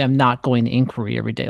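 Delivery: ordinary delivery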